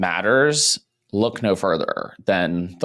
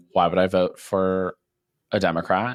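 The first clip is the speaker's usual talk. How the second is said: ordinary talk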